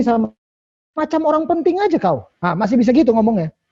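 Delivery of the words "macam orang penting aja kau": put-on high, sassy Manado accent. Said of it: "Mamanya masih bisa ngomong gini".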